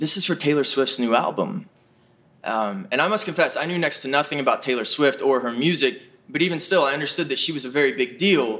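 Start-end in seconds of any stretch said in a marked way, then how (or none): 0.0-1.7 intimate, confiding, secret-sharing tone. Retelling what the photographer's wife said as she leans in: imitating a near-half-whisper. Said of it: "almost in a whisper".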